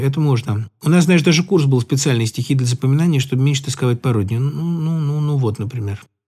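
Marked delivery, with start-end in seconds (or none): none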